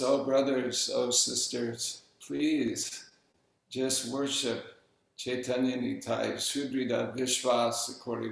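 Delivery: ordinary talk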